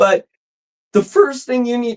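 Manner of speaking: cracked, breaking voice cracking up high. A presenter talking to viewers before going to the board, voice cracking. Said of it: "my voice cracked".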